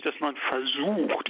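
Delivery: versucht stressed hard and slowed.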